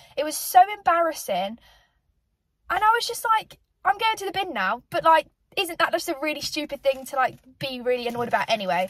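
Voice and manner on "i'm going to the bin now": put-on announcer-style delivery, sassy and pitched up. Retelling a reply to a restaurant worker: retelling a sassy reply. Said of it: "I said it with a bit of sass".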